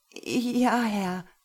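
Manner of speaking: halting, stammering speech. Lena replies to the man who has just punished her, stammering. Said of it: "stammelte Lena".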